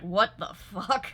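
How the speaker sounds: put-on shocked reaction. Retelling a first reaction to a mud mask scene: retelling own shocked reaction. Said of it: "and I was like".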